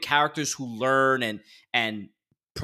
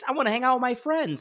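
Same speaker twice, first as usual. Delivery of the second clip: very high, whiny, bratty voice; 12 semitones higher than usual. Imitating a character complaining to his uncle: whiny Luke Skywalker voice. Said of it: "he's so whiny and annoying".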